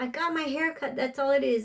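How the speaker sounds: heated, high-pitched shouting. Retelling the mother's words after a haircut: imitating someone yelling.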